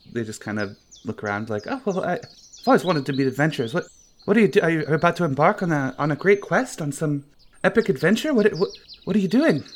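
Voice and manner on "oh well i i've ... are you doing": put-on high, puzzled, confused young child voice. Voicing a confused half-orc child asking about a quest: confused half-orc child voice. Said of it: "He looks a little confused".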